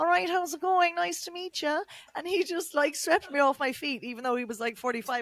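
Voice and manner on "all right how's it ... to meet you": put-on heavy, broad Cork accent, pitched up. Retelling what a man said approaching you at the bar, in a thick cork accent. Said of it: "in his really thick Cork accent".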